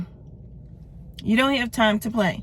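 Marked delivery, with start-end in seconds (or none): 1.2-2.4 "don't" punched, with falling finish.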